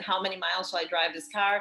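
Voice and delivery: ordinary talk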